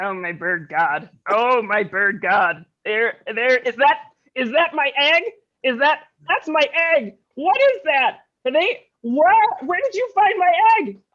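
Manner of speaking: cartoon giant bird voice, pitch swooping all over. Speaker voices the bird character Petey: Petey the bird's voice. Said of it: "Is this his voice?".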